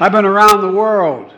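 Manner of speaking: very loud, high-pitched yelling. Talking about climate to a crowd, yelling.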